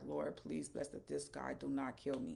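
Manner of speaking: put-on tearful voice. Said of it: "I started crying".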